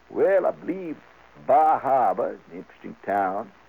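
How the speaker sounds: unhurried, slow, deliberate delivery, each word weighed. Describing how a Maine type looks at you and speaks, deliberate Maine-type talk. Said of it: "the Maine type talks a little like this. And he talks very deliberate".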